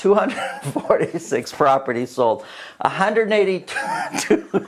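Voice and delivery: suppressed laughter breaking through speech. Reading out sales numbers while trying not to laugh: laughing while talking. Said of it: "I'm trying not to laugh".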